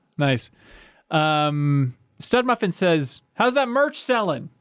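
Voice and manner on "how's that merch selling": high, yelled, mock voice shouted out. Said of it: "He yelled it?".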